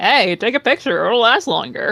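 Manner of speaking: high, playful, needling teasing tone. Playing a character who taunts someone: teasing tone. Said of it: "to a teasing tone of like".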